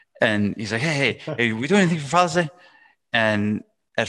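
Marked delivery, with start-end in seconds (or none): 0.8-2.5 fast, rushed, pitched-up, rattled-off busy talk. Recounting Leo coming into the office to ask something: imitating Leo talking fast. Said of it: "and Leo talks really fast".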